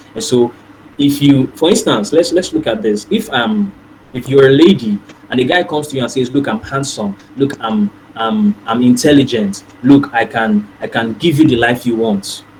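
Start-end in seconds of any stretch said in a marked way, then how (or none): none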